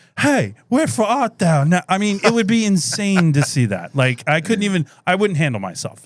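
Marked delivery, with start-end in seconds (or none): 0.2-1.7 high-pitched ballpark announcer voice. Show how he does the whole thing, in a Harry Caray voice. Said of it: "he does it the whole thing in the Harry Carey voice".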